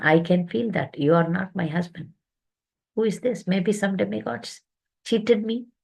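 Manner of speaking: mock weeping, distressed, tearful. Retelling a story where a wife realizes she was deceived: retelling a woman crying. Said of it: "She's crying like anything".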